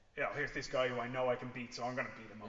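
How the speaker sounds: ordinary delivery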